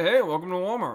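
put-on old man voice. Recalling the old store greeter at the front: imitating an elderly walmart greeter. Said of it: "usually a very elderly fellow".

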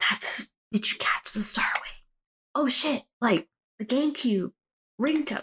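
hushed remark whispered under the breath. Retelling what was said during a movie in a theater: imitating own whisper. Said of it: "that was me whispering it to Jesse".

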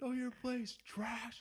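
acted-out yell. Retelling yelling back across the shop: imitating own past yell. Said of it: "And I literally yell".

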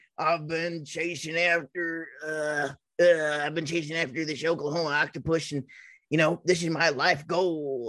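lumbering, oafish cartoon big-guy voice. Describing a large hairy guy, in a Ren and Stimpy big-guy voice. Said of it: "they talk like that".

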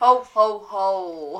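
every ho stretched out, nice and loud. Speaker finishes talking about Christmas greetings, then does a Santa Claus impression. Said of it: "the best Santa Claus impression actually I've ever heard".

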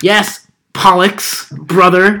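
mock patronizing, humoring, condescending tone. Describing how he always talks to Pollux; mocking condescending tone. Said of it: "he always talks to him in condescending tones".

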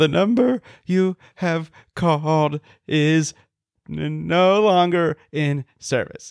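put-on very slow, halting, broken, frightened recording voice. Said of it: "she says it kind of broken 'cause she's, like, scared".

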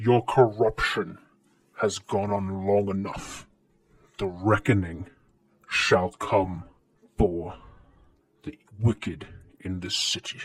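throaty, guttural creature voice. Game narrator voices a creature speaking to the players, in a guttural creature voice. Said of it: "You hear this just guttural voice and says".

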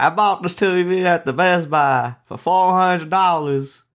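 high-pitched Detroit accent. Imitating how people sound in Detroit: imitating a Detroit accent. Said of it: "That's what they sound like in Detroit".

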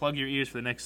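plain

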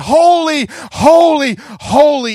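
mock booming, very loud, triumphant cry. The speaker describes angels in a vision, acting out a great triumphant voice. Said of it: "in this great triumphant voice".

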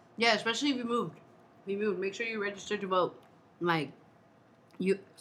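speaking with food in mouth. Reminding viewers to register to vote, talking while eating. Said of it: "I'm eating a paleta over here".

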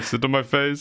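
ordinary talk

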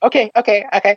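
high-pitched voice, pitched way up. Retelling his reaction on realizing the air rifle was useless, his past high-pitched voice. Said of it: "with my high-pitched voice at the time".

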